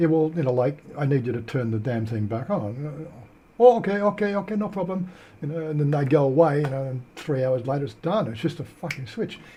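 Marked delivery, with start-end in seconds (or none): 3.6-5.1 put-on Indian accent, pitched up. Retelling an Optus phone complaint, the agent replying, put-on Indian accent. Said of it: "in an Indian accent".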